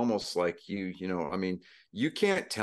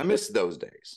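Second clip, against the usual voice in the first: usual speaking voice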